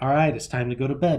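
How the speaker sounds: normal talking voice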